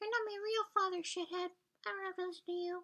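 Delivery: very high-pitched put-on devil voice. Acting out an exchange between Dad and Maggie, Maggie answering: high-pitched devil voice. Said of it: "in like a high-pitched devil voice".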